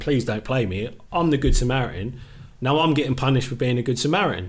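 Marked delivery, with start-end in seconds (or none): 0.0-0.9 acted mock pleading. Retelling how another player begged not to be played on the left: mock-pleading. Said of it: "but he's pleading".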